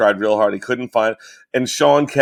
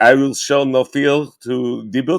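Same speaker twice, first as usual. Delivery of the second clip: put-on Israeli-accented speech. Saying a line on request after being asked for an accent: Israeli accent. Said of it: "do the Israeli accent and say".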